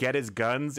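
normal talking voice

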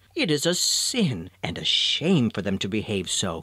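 ordinary talk

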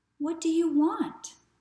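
drowsy, just woken. Woken at night by tapping on his window, he answers sleepily. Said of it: "he said sleepily".

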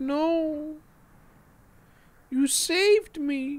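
high puppy voice, very slow and drawn out. Speaking for the puppy in the game: voicing the puppy. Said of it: "Puppy's like".

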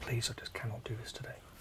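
hushed, pleading voice. Facing a man with a repossession warrant at the shop: whispering, pleading. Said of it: "Why are we whispering?".

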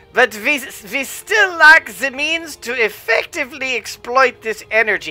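bad put-on German accent. Redoing the line, doing the Z's, in a bad fake German accent. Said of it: "The bad German accent".

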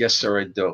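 ordinary talk

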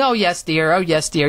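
put-on condescending tone. Recalling how skeptical family answered talk of UFOs, mock-patronizing. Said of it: "be patronizing".

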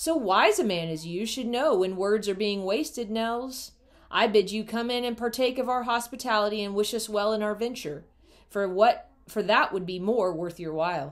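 hard, clear mocking voice. The old man addresses Nels Anderson in a hard, clear, mocking voice. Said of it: "hard, clear voice with a touch of mockery".

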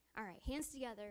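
ordinary talk

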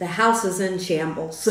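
ordinary talk, nothing marked

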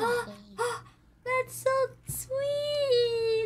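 high, slow, teary, touched crying gush.

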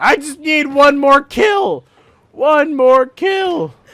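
loud, high-pitched yelling. Speaker retelling what another player yelled at him: retelling a yell. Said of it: "he yelled at me for that one".

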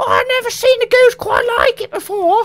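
put-on cockney voice. Describing two contrasting characters, acting out the woman's reply in a cockney accent. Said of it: "and she's cockney".

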